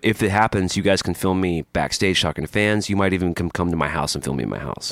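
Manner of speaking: ordinary talk, nothing marked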